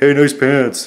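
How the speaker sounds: sarcastic, insincere, mocking tone. Retelling what some dude said about your pants: imitating a sarcastic remark. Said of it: "But sarcastically".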